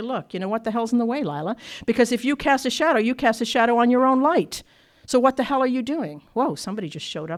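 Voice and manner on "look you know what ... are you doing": normal talking voice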